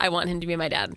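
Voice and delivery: ordinary talk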